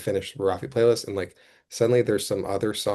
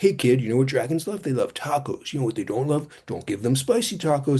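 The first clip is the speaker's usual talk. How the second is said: smug, pleased, pitched-up narrator patter; 5 semitones higher than usual. Describing the book they hate most, the speaker mocks its narrator. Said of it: "this fucking jabroni narrator being like".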